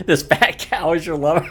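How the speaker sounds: high, loud delivery, laughing through the words.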